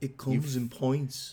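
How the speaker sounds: put-on unhurried Liverpool accent. Repeating a joke line about dwarves and pints after being told to: Liverpool accent. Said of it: "You had, like, a Liverpool accent".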